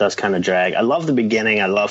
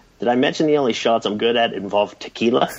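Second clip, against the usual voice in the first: ordinary talk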